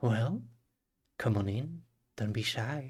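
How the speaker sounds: silky smooth, silken tone. Storyteller voicing an unseen figure inviting the group in: silky smooth voice. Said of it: "you just hear the silky smooth voice say".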